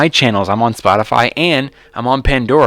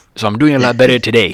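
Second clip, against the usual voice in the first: put-on deadpan comedian voice. Retelling a comedian's joke from a clip: Hedberg impression. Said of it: "I could do a Hedberg".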